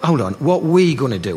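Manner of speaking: ordinary talk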